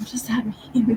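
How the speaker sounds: whispered voice.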